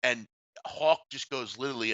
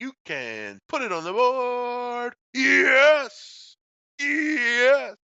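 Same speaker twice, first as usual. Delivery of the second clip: very high, loud, swooping, drawn-out "yes", excited announcer; 12 semitones higher, 6 dB louder than usual. Recalling a broadcaster's signature call: Hawk Harrelson home run call. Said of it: "but he also did that".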